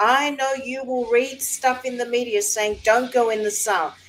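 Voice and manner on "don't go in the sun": ordinary talk, nothing marked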